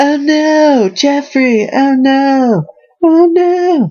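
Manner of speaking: very high, drawn-out, dragged cartoon voice. Showing off impressions, doing a Toby from Family Guy impression. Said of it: "that's me doing my impressions".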